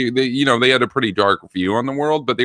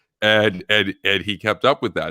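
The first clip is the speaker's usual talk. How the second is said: ordinary delivery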